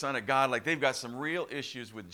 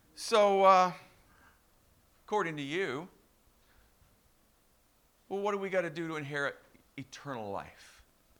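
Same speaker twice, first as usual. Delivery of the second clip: play-acted sly sarcasm with raised pitch; 5 semitones higher than usual. Retelling a teacher of the law questioning Jesus: imitating a sarcastic tone. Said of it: "you can kinda hear the sarcasm almost".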